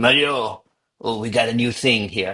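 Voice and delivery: mock French accent, slowed. Recalling a boss bringing him news, imitating Benoit's French accent. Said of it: "just French accent".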